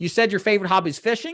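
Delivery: fishing lifted up with rising pitch. Coaching on asking clients questions, rising pitch on fishing. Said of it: "notice my tonality upwards. I'm asking a question with how I'm saying that word".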